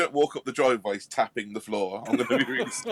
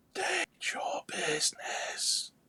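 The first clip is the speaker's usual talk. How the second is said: dry, hushed whisper, barely voiced; 9 dB quieter than usual. Narrator voicing someone behind a crystal door, in a dry, whispery voice. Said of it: "there's a dry, whispery voice that says".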